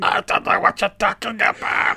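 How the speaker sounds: put-on breathy, very old man voice with buzzing throat. Imitating how old MacLeod talks in the film: old MacLeod voice, like drunk bees. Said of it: "sound like he's, like, drunk a pint of bees".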